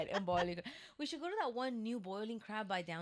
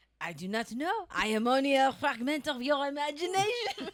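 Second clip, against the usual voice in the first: loud, high, belted put-on French accent; 6 semitones higher, 9 dB louder than usual. Asked for a French accent, improvising a line in a French accent. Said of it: "give me a French accent?".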